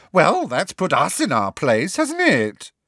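high-pitched, swooping stone gargoyle voice. Narrating a story, voicing a gargoyle answering a student: high-pitched gargoyle voice. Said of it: "said the other gargoyle in a high-pitched voice".

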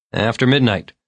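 usual speaking voice

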